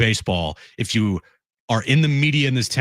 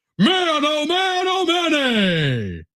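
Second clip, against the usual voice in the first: slow, sing-song, high, swooping, stretched-out broadcaster call. Doing a home run call as the broadcaster Don Orsillo would. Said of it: "I bring my jaw down a little deeper for my Don".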